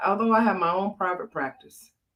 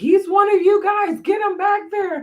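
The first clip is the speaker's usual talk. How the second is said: very high, loud, frantic, crazed screaming; 7 dB louder than usual. Retelling being at the hospital, reenacting her own yelling at the officers. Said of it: "yelling at the officers".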